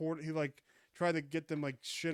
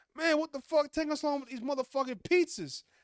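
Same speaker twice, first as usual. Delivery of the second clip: mock, very high, shrill, loud, furious yelling; 10 semitones higher, 6 dB louder than usual. Retelling a customer causing a ruckus at a pizza shop: imitating an angry customer. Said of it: "causing a ruckus there".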